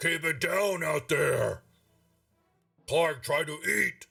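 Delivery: every word growled. A game master voices someone heard from up a stairwell, in a growling voice. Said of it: "a growling voice".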